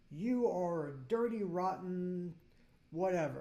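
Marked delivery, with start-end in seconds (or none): none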